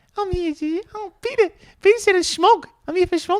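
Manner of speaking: very high-pitched put-on New Zealand accent. Showing how a New Zealand accent could fake being a local: put-on New Zealand accent. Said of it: "put on the accent".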